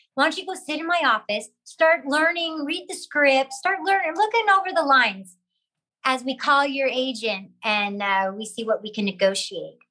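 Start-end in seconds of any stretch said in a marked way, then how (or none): none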